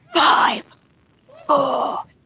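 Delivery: swooping, creepy sing-song voice. Creeping out friends by playing Jigsaw: creepy Jigsaw voice. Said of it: "I'm gonna all creep you out with Jigsaw".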